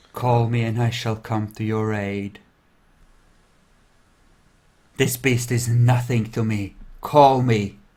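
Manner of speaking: soft, faint whisper. In a role-play, a figure speaks into the listener's ear: faint whisper. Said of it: "he whispers faintly in your ear".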